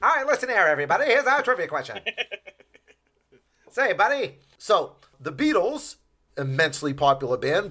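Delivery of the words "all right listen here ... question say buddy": fast, put-on, old-fashioned transatlantic accent. Speaker announcing the trivia question to everybody, in an old-timey transatlantic accent. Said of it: "I'll do everything with the transatlantic accent".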